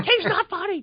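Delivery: play-acted, very high, shouted yelling outburst. Retelling yelling at the radio and TV: retelling own yell at the TV. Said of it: "I yell at the radio and the T V".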